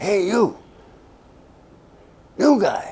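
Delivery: very high stage whisper. Retelling a voice heard through a bamboo mat calling to him, retelling a stage whisper. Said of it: "I hear the stage whisper voice".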